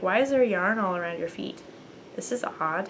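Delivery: ordinary delivery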